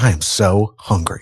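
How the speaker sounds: low, slow, soft dejected sigh. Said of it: "he just sounded so dejected and sad".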